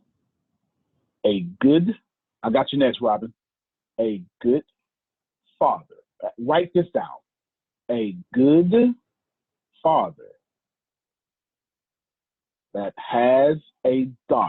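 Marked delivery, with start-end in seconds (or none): 1.3-14.5 slow, word by word with long pauses. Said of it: "I'll say it slowly".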